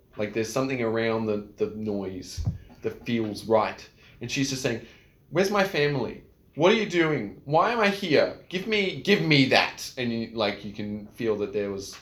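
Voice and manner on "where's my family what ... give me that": put-on young girl voice, much higher, louder, slower. Narrating a familiar voice the listener hears, in a high-pitched young girl's voice. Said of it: "high-pitched young girl's voice".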